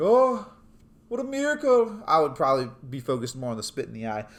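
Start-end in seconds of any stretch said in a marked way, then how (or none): 0.0-2.0 high, loud, awed gushing. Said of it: "be like".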